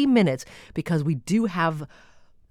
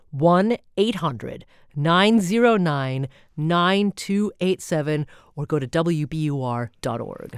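slow, deliberate, drawn-out, careful dictation delivery. Speaker repeats the call-in number for listeners, said slowly. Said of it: "I'm going to say it slowly".

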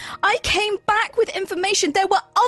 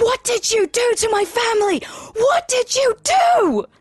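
furious, enraged, accusing, drawn-out delivery. Confronting two characters over a family, in character: screaming in character. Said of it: "just screaming".

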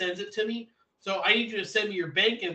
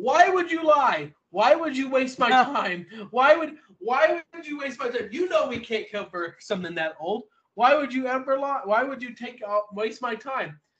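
mock angry yelling, pitched much higher; 6 semitones higher, 5 dB louder than usual. Retelling a call-center worker's angry outburst at the speaker, imitating someone yelling. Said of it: "He's yelling at me".

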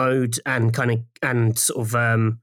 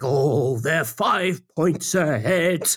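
slow, deadly serious tone, pitched up; 5 semitones higher than usual. Imitating the actor Lenny James announcing the score: serious Lenny James voice. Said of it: "who's quite sort of serious, and he gets very kind of, he's like".

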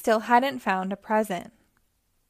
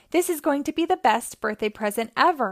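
ordinary delivery

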